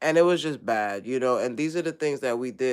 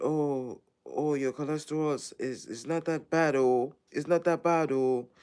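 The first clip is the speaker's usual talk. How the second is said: put-on Ghanaian accent, pitched higher; 3 semitones higher than usual. Retelling what the doctor said about the labs: imitating a Ghanaian accent. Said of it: "Ghanaian, that's how they talk".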